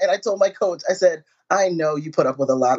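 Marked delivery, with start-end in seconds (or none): none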